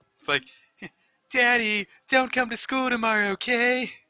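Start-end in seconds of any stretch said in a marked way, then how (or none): 1.3-3.9 very high-pitched, loud voice. Slipping from one character voice into another, doing Valoria's voice. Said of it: "I want to slip into Valoria's voice".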